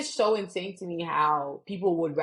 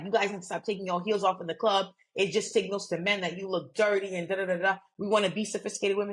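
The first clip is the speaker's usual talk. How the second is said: ordinary talk, nothing marked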